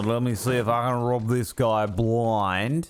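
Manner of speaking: put-on Australian accent with upward-inflected ending. Repeating the line to chat to show it: Australian accent, rising ending. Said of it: "I said blind, like that, because Australians end every fucking sentence with a fucking question".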